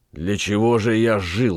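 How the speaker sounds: ordinary delivery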